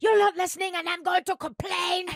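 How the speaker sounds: put-on complaining tone in a very high French accent. Retelling a woman's complaint on a train to Oxford, imitating a French accent. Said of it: "She had a French accent, so we'll add that bit to it".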